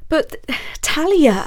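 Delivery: stammering, halting words. Basil answers a warning not to go to the lodge: stammering. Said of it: "stammered Basil".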